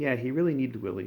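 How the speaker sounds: usual speaking voice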